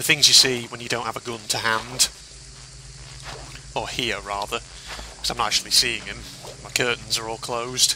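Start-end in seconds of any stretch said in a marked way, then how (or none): none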